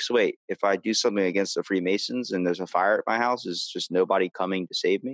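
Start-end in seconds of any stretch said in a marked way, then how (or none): none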